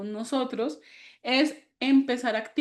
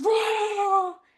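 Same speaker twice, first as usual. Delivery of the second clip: very high, long, drawn-out roaring exhale like lion; 9 semitones higher than usual. Leading a breathing exercise, letting the breath out; roaring like a lion. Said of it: "lo vamos a botar como un león".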